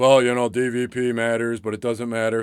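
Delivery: mock flat monotone. Retelling how Mitch talked about playoffs last Saturday, imitating Mitch's monotone. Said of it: "you get in that monotone voice".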